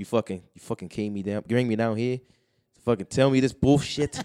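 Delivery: put-on voice of an angry man, furious ranting. Retelling an angry man's outburst: imitating an angry man. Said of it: "He was fucking so mad".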